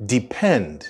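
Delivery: depend with stress on the second syllable, -pend. English lesson on the verb depend: stress on second syllable of depend. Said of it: "The stress in the word depend is on the end".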